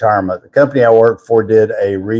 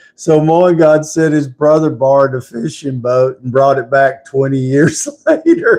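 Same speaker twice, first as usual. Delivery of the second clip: talking through giggles, pitched up; 5 semitones higher than usual. Reading out a viewer's comment on a live stream, laughing while talking. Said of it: "I'm laughing over here".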